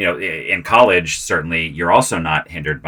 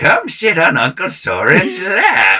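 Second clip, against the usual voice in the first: creepy, put-on old man voice, high and swooping; 13 semitones higher than usual. Retelling what he would say to his castmates in a role, in a put-on old man's voice. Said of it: "I got to put on this old man's voice".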